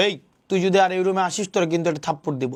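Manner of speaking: plain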